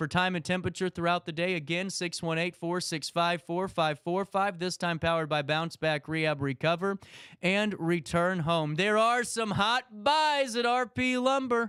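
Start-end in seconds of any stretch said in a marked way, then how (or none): 8.8-11.7 drawn-out, pitched-up yell. Radio announcer reading a sponsor ad, making sure listeners hear, yelling. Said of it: "That's why I'm yelling".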